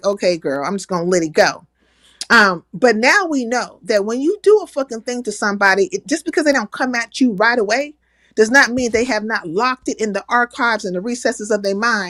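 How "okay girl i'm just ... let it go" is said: mock dismissive tone, pitched lower. Retelling how someone brushed off an earlier attack: imitating ODS being dismissive. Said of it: "was kinda dismissive".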